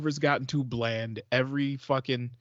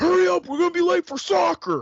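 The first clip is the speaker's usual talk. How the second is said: mock furious, very high, loud, hurried yell; 6 dB louder than usual. Pulling into the driveway, the speaker acts out calling to the kids, retelling an angry yell. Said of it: "I angrily yell".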